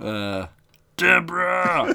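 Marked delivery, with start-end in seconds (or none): 1.0-2.0 very high, very loud, rough shout. Doing a Ray Romano impression when asked for one. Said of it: "Can I hear your best Ray Romano impression?".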